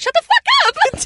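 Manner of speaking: put-on very high outburst with cracking voice. Imitating another speaker's outburst: imitating a cracking yell. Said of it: "Your voice cracked like you were like".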